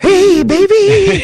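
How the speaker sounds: put-on very high, loud, with baby drawn out long. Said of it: "I could do him right now, pretty good. With this voice?".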